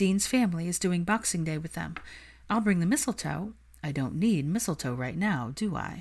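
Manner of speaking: plain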